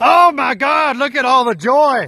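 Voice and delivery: bright exclaimed phrase, high. Showing off the pond's greenery, imitating Gerard. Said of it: "that's my best impression of you, Gerard".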